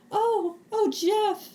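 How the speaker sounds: very high-pitched puppet pig voice. Retelling an awards-show bit, imitating Miss Piggy. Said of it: "She's like".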